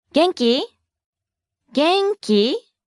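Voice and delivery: genki said with a high rising tune. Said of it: "note the rising intonation".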